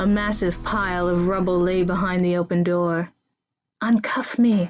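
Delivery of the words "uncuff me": whispered, higher pitch. The narrator, in cuffs, speaks to Laris: whispered. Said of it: "I whispered to Laris".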